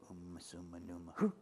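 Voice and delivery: soft, under the breath. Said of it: "make up some Latin-sounding words under my breath".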